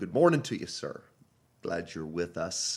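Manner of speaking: deep, businesslike phone-style voice. Greeting a participant who just joined the Zoom call, deep quiet business phone voice. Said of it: "Your voice got really um / Deep and quiet. / business. Like you were on the phone".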